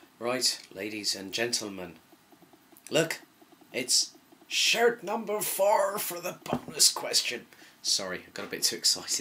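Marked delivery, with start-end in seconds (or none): 0.2-7.5 put-on Irish accent, swooping, not quite landing. Announcing the bonus question to the audience, attempted Irish accent. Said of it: "I don't think the Irish accent came out right there".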